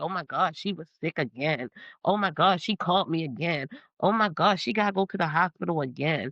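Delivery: put-on busybody gossip voice, repetitive chatter. Retelling how people talk behind a sick friend's back: imitating gossiping people. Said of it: "people in the world that go around and talk about it like".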